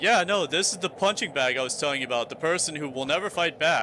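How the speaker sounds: ordinary delivery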